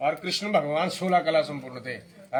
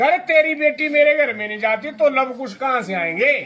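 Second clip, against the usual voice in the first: high, loud, emphatic retort-like delivery. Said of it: "Dasharath बोलते हैं".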